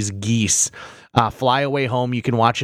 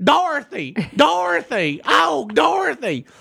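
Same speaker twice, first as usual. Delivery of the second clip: very high, sing-song, swooping, drawn-out chicken voice. Recapping Return to Oz, showing how its chicken talks: Billina the chicken voice. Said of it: "the chicken talks like this".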